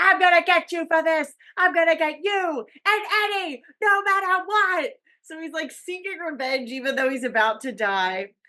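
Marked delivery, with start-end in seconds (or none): 0.0-4.9 put-on high, raised, vengeful screaming. Retelling a film scene where a bleeding man threatens revenge: imitating Ray screaming. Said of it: "he's just screaming, like".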